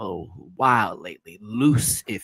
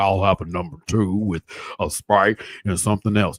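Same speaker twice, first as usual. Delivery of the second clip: put-on tough, masculine-sounding voice, louder; 5 dB louder than usual.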